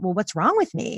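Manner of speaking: ordinary delivery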